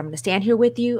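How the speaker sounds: ordinary talk, nothing marked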